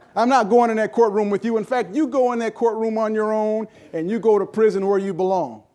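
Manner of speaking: put-on angry screaming voice. Retelling a courtroom scene, speaker acts out the attorney; retelling a lawyer screaming. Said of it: "the lawyer was screaming and yelling at his client".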